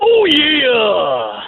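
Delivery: very high pitch, "oh yeah" with "yeah" drawn out. Asked for a best Macho Man, doing a Macho Man Randy Savage voice. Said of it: "give me your best Macho Man".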